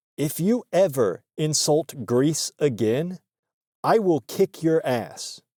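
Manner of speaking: put-on grave, deadly earnest tone. Retelling how Nick got serious and threatened a guy: imitating Nick, dead serious threat. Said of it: "he got real serious and he was like".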